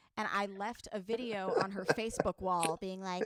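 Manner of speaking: ordinary talk, nothing marked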